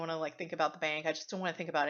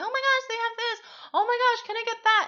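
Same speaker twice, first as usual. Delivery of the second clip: put-on high, loud excited little boy's scream. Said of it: "running around and screaming and saying".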